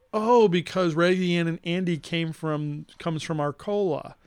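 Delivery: ordinary delivery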